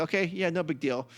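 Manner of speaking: ordinary talk, nothing marked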